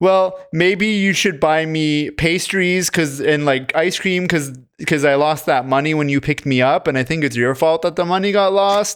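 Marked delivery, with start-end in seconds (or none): none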